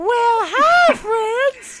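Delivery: nine-foot-tall cartoon otter voice. Voicing a nine-foot-tall cartoon otter greeting the players: nine-foot-tall cartoon otter voice. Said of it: "a nine-foot-tall cartoon otter peer its head and start looking at you and say".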